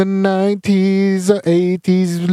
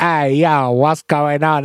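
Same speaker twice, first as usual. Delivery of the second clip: very slow, drawn-out bad fake American accent; 4 semitones lower than usual. Mocking british actors who play americans: bad fake american accent. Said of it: "That's not how they sound".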